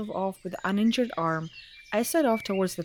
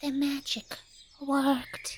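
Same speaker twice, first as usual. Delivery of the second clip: high, anime-style voice; 5 semitones higher, 5 dB quieter than usual. Reading a story aloud, voicing the narrator's spoken words: anime voice.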